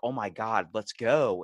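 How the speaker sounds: very slow, drawn-out complaining. Retelling a man waiting behind an elderly woman: imitating someone complaining.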